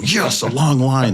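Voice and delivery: slow delighted gushing voice. Retelling airport bits: put-on line-loving character. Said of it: "I do my character where I love lines".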